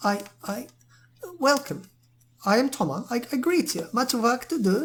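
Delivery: put-on accent, very high, slow, nervous, stammering. Narrating to players, voicing a nervous smith who greets them: Toma, nervous, in an accent. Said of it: "I don't know why I slipped in that accent".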